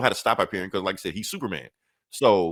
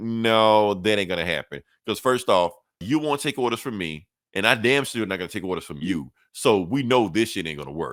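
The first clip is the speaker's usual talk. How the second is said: ordinary delivery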